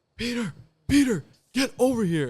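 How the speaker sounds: mock high, loud, stretched-out, drawn-out screaming yell. Retelling how the father called from the back: imitating father screaming. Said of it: "My father's screaming at me".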